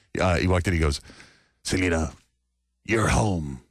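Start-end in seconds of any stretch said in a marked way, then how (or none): 1.7-3.5 put-on dramatic delivery, lower. Retelling what a colleague said when a guest walked in: imitating a dramatic delivery. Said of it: "He always so dramatic".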